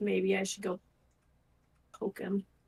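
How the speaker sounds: muttered, mumbled under the breath. Muttering about another character during a game: mumbling under breath. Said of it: "I'm gonna mumble under my breath".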